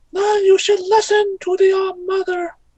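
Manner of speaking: tiny, squeaky, very high-pitched creature voice. Describing a scene, the speaker voices a Bulbasaur talking to a person, little Bulbasaur voice. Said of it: "says in a little voice".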